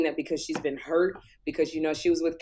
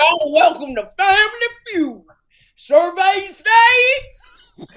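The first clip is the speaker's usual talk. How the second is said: put-on very loud, very high, belted country accent; 9 dB louder than usual. Arguing about where Steve Harvey's accent comes from, doing a Steve Harvey country accent. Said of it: "Steve Harvey has a country accent".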